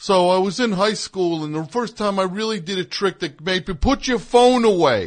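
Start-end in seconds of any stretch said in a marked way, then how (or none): 3.7-5.1 swooping, stretched-out yell, loud and high. Retelling a magician telling an audience member off: imitating a yell. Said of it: "he's yelling at some guy".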